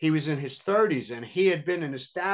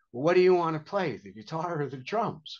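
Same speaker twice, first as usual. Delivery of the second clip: put-on fearful, nervous tone. Speaker recalls his father calling up from downstairs, imitating his nervous trepidation. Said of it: "he said with this trepidation in his voice".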